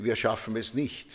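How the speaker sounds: ordinary delivery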